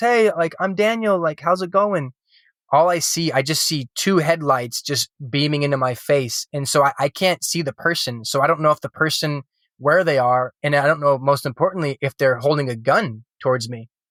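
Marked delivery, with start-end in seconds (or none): 0.0-2.1 brightened, lightened-up, pitched-up tone. Retelling waking up to a stranger's headlights: imitating own lightened-up voice. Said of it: "lighten up my voice".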